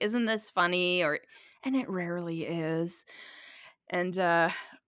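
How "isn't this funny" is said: normal talking voice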